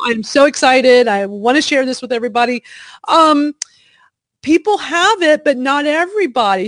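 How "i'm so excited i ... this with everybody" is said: ordinary talk, nothing marked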